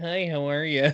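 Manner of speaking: put-on suburban way of talking. Guessing aloud what a character's voice will sound like, in a suburban accent. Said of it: "some like suburban like accent".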